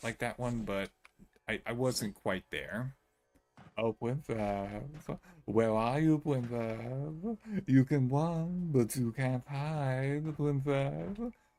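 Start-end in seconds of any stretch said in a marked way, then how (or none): 3.8-11.3 imitated taunting voice. Copying a taunting voice just heard, imitating the taunting voice. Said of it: "A little bit closer, but I'm still not quite there".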